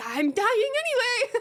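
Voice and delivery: very high, shrill screaming. Retelling what they said to the ambulance crew: imitating own screaming. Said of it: "I was screaming at these people".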